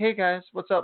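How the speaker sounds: gentle, unassuming, meek, mild-mannered voice. Imitating how the tanned wrestler actually talks: imitating a soft-spoken wrestler. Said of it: "the most soft-spoken human being".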